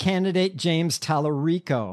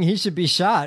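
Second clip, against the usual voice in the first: ordinary talk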